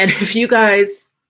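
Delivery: loud, laughing while talking, words breaking up. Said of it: "I'm trying not to laugh too hard".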